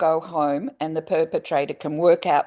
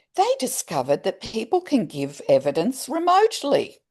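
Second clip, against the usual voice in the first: dry, mocking, sing-song, pitched-up sarcasm; 6 semitones higher than usual. Describing how the courts learned to take evidence remotely: sarcastic. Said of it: "listen to my sarcasm font".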